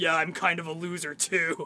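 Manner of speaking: laid-back, chummy, casual buddy-style delivery. Quoting the next movie line: casual buddy Venom line. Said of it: "very just, like, buddy dialogue".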